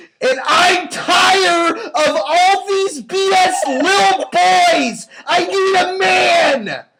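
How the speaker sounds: very loud, shrill high shriek, man drawn out. Reading an all-caps dating profile aloud verbatim, screaming the all-caps text. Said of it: "I'm gonna scream".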